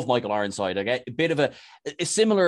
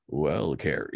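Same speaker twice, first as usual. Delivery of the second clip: put-on sexy actor voice, lower pitch; 9 semitones lower, 4 dB quieter than usual. Imitating an actor talking to a character: Clancy Brown sexy voice. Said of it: "so he's got a sexy voice".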